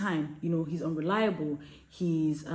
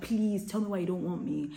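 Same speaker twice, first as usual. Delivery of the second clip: put-on begging, pleading tone. Describing someone unwanted who keeps looking for answers, acting out begging. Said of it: "You keep begging like a beggar".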